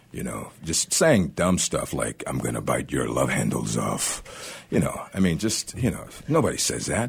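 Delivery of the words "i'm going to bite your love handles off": animated, deep cartoon monster voice. Voice actor showing the line he voiced in an adult cartoon, monster voice. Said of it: "being this monster voice on it".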